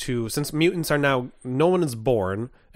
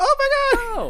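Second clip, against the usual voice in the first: very high-pitched, exclaiming voice. Imitating a listener's future message reply: high Cassie Kiddo voice. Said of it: "That's my Cassie Kiddo voice".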